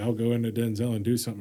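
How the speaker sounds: plain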